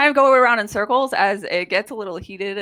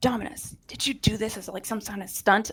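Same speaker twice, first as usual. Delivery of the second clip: soft, breathy whisper, barely voiced; 9 dB quieter than usual. Describing a scene where Thalos asks Dominus about a stunt: whispering as Thalos. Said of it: "as they're kind of whispering".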